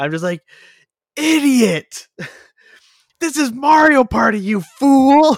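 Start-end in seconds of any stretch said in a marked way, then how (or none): 1.1-5.4 mock very high, slow, drawn-out drunken gloating. Retelling own taunt at a friend during a game: imitating own drunk gloating. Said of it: "Meanwhile, I'm drunk, right?".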